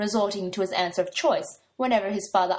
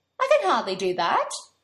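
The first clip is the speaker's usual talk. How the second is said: reproachful, reproving tone. Morgana answers a man demanding she text someone back; reproachful. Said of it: "she said reproachfully".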